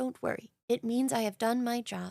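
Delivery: soft storybook bear character voice. Retelling what he said while hugging the speaker, in Pooh voice. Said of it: "and as Pooh".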